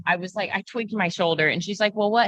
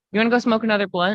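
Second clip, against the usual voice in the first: idle, bored-stiff, offhand tone; 4 dB louder than usual. Imitating a client getting tattooed, doing a Ben impression. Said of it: "this is my impression of Ben getting tattooed".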